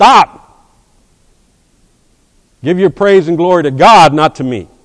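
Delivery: very loud, high, top-of-the-lungs scream. Acting out how Paul would stop people applauding him: imitating Paul screaming. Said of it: "scream from the top of his lungs".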